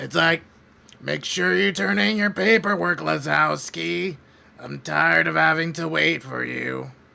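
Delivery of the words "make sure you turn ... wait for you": rough, creaky, raspy heavy-smoker voice. Describing the voice the speaker sounds like, doing the lady from Monsters, Inc. voice. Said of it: "It's like a heavy smoker".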